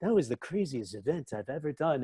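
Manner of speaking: put-on odd, quiet English accent. Speaker retells Johnny Depp describing an event full of sound effects; Johnny Depp weird English accent. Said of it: "a weird English accent".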